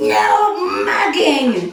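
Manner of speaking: loud, slow screaming. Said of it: "just screaming".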